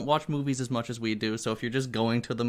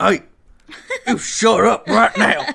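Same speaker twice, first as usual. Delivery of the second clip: very loud, very high, rough barking dad voice; 11 semitones higher, 14 dB louder than usual. Retelling confronting noisy people in the movie theater's back row, put-on dad voice. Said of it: "I had to use my dad voice".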